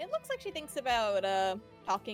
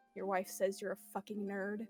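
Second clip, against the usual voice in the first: whispered in character voice; 3 semitones lower, 4 dB quieter than usual. Playing a character who leans in to another's ear: whispering in character. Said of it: "she's going to whisper in his ear".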